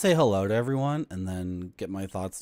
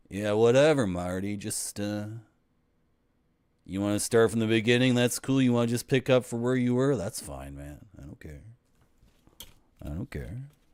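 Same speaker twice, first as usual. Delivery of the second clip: unbothered, laid-back, easygoing dude voice, whatever-man tone. Streamer mimicking the retro Twitch viewers: impression of Twitch retro viewers. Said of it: "This is my impression of of Twitch retro viewers".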